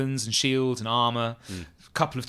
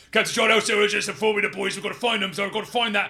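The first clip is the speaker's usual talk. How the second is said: fast, pitched-up gabble at top speed; 9 semitones higher than usual. A bugbear guard named Grice reports to his superior officer; Grice bugbear voice, fast-talking. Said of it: "as the hulking figure of [name] the bugbear".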